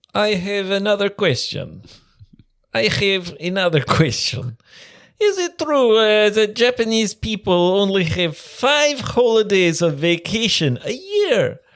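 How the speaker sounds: high-pitched put-on Russian accent. Reading a listener's emailed question aloud: put-on Russian accent. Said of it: "try to do his, uh, Russian accent".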